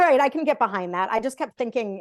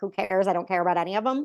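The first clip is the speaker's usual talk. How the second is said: ordinary delivery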